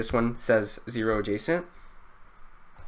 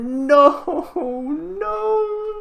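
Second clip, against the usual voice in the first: very high, mock crying wail. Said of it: "I'm gonna start crying again".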